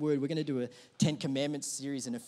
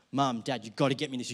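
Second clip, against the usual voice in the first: mock nagging, pleading tone; 3 semitones lower than usual. Recalling begging parents for a gaming console as a kid, imitating nagging as a kid. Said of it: "I went into a really Gollum mode".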